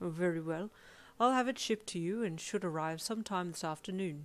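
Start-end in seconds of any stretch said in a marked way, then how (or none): none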